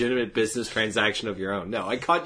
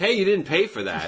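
play-acted irritated complaint, pitched higher; 6 semitones higher than usual. Retelling how the fish market vendor reacted to the eaten eel: imitating an annoyed vendor. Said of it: "just being, like, annoyed".

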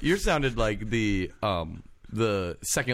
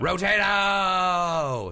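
imitated yell, much higher; 7 semitones higher than usual. Retelling how Mike and Dan's dad yelled to turn the channel, imitating a dad yelling. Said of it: "That's my impression of it".

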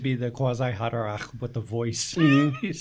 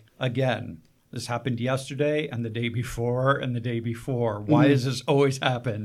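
normal talking voice

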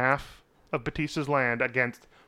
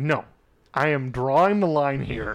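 put-on sarcastic, exasperated British voice. Imagining the father fed up with his daughter: imitating Charles Dance as sarcastic exhausted Brit. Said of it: "so exhausted by his daughter that he's just like".

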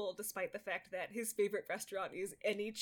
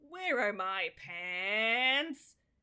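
loud sitcom catchphrase delivery, "pants" stretched long; 5 dB louder than usual. Retrying an imitation of a favorite line, take two: imitating how they say it. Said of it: "That was not a good imitation of how they say it".

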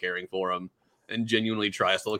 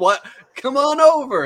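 put-on angry voice, higher and louder; 10 dB louder than usual. Retelling a character's reply when he is told no: imitating someone mad. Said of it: "And then he's all mad".

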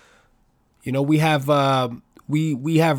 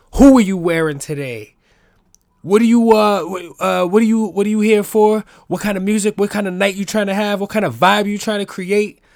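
put-on loud, high child voice. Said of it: "I would run around the family parties like".

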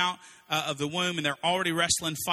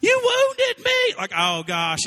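put-on sobbing, swooping, very high, drawn-out wail; 8 dB louder than usual. Retelling a childhood fight where he starts bleeding, imitating him crying. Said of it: "and so he's crying".

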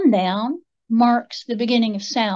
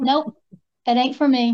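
ordinary delivery

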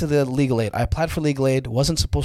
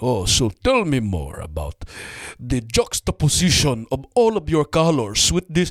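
swooping, affected, affluent buyer voice. Speaker performing a buyer character they created, imitating a would-be affluent buyer. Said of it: "he's trying to sound mad affluent".

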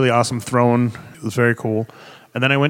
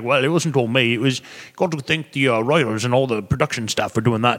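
clumsy, bad, fake English accent. Retelling an actor's reply to the speaker's thanks, in a bad English accent. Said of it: "that was my bad English accent".

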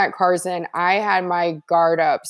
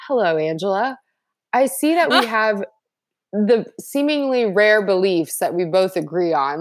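plain

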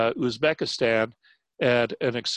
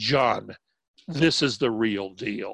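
mock clenched-teeth delivery, much slower. Retelling what a man said while gripping the speaker's shoulders, through clenched teeth. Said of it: "said through clenched teeth".

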